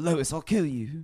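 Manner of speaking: put-on sinister little cartoon infant voice. Asked for their best Stewie impression, the speaker does a Stewie Griffin impression. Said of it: "Do your best Stewie impression".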